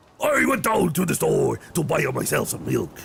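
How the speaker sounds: loud exaggerated Japanese accent. Showing what a stereotypical japanese guy sounds like, in a japanese accent. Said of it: "sounds like a Japanese guy".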